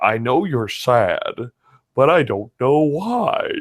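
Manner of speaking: slow, put-on talking-dog voice. Quoting the dog Shadow from the movie: Shadow impression. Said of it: "How do you like my Shadow impersonation?".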